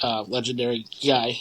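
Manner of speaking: usual speaking voice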